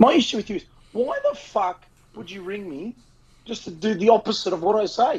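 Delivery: loud, high voice peaking the mic. Complaining to a caller who ignored the advice given: loud, peaking voice. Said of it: "as my voice gets a little bit peaky here".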